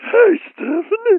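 put-on puppet voice, high-pitched. Asked to try a high-pitched voice, greeting a guest on the call in a high-pitched Muppet voice. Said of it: "do an impression of a high-pitched voice".

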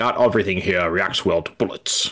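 put-on Russian accent. Quoting a movie line in Sean Connery's Russian accent.

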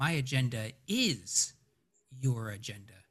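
heavy, weird emphasis landing on the word is. Quoting exactly how a man said a line, weird strong stress on is. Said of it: "this is how he says it. ... a weird weird emphasis on the word is".

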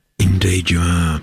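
husky-sounding delivery. Introducing a guest on the radio show, the host speaks in a husky voice. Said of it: "Excuse me, husky".

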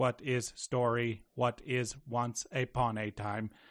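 halting, robotic speech. Describing how a movie robot first talks: imitating a robot's early halting speech. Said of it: "at first he kind of talks like this".

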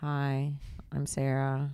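deadpan, very low, flat monotone. Retelling a mic check, imitating Sarah's flat hello: imitating Sarah. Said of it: "And I swear she goes like this".

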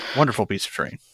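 dry, sarcastic tone. Praising a donated piece of event terrain: sarcastic. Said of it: "Did I take sarcasm there?".

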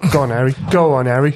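loud, put-on Cockney accent. Recalling taunting a guy at a game: cockney impression. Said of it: "I kept doing a Cockney impression".

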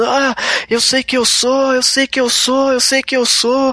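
mock anguished, desperate yelling, pitched high. Describing a film performance, imitating Mickey Rourke shouting. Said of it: "ele gritando".

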